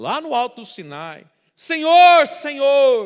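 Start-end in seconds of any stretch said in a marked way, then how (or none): 1.5-3.1 very loud, high, desperate shout. Acting out Moses crying out on Mount Sinai: shouting as Moses. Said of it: "Moisés então começou a gritar".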